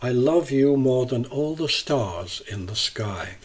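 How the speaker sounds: plain reading voice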